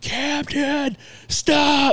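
very high, piercing, blood-curdling scream. Retelling yelling at a young son running toward a busy road: imitating own past yelling. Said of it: "and yelling".

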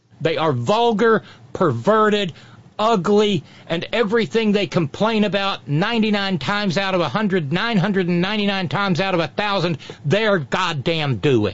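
ordinary talk, nothing marked

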